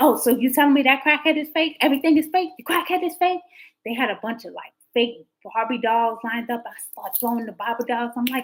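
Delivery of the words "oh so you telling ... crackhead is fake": high, loud, incredulous, rebellious tone.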